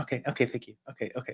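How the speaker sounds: short, brisk, to-the-point businesslike whisper. Describing how conversations go with Ray: imitating Ray in business mode. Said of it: "when he's in business mode".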